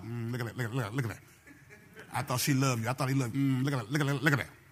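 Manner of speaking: low, quick, insistent rapid-fire needling chatter. Showing how the devil talks inside your head: imitating the devil talking fast. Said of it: "he talks fast like that too".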